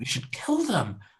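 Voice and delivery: hushed voice. Speaking in character to a fellow player, lowered voice. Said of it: "Then I lower my voice".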